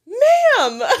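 mock, very high, stretched, yelled, drawn-out ma'am. Retelling a reply text written in all caps: retelling an all-caps shout. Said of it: "in all caps".

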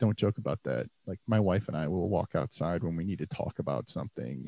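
low, grave, dead-serious earnestness. Retelling what another person said in reply: imitating someone dead serious. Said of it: "he's dead serious and he goes".

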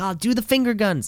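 put-on yelling. Retelling watching a match at home: retelling yelling at the tv. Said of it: "I'm yelling at the T V like".

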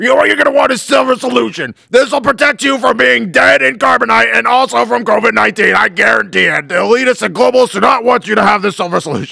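put-on ranting broadcaster voice. Answering a request to sell silver: Alex Jones impression. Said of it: "I get dizzy doing Alex Jones".

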